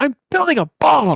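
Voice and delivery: very high, loud hollered yell. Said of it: "he yells".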